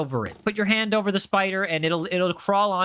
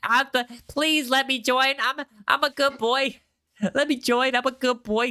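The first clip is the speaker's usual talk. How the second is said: high, slow, begging, eager-to-please pleading; 5 semitones higher than usual. Imitating how a chat user sounds in their head: imitating a chat user pleading. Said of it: "that's how you sound like in my head".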